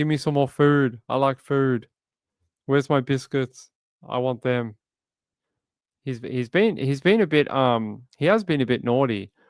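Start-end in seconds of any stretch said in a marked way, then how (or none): 0.0-4.8 put-on cat character voice. Speaking for the purring cat after calling him naughty: voicing the cat. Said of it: "He's like".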